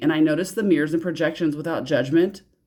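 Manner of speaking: ordinary talk, nothing marked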